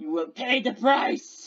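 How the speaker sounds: big, huge, hulking brute orc voice. In a role-play game, an orc stands on the trail before the bull, in a hulking orc voice. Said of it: "onto the trail comes a huge, hulking orc!".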